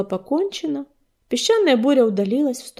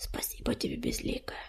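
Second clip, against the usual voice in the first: barely audible, soft, very quiet whisper; 16 dB quieter than usual. Narrating a character answering another's promise; whispered. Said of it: "прошептал Царапка".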